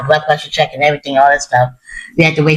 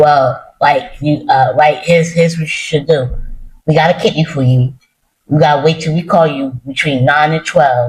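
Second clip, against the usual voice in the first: usual speaking voice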